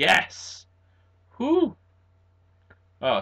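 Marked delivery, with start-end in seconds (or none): 0.0-1.8 loud, high, triumphant victory shout. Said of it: "sorry for shouting".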